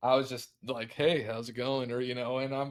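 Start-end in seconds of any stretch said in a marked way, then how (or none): 0.9-1.9 put-on flirty, charming delivery. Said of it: "I was totally using the Riz on her".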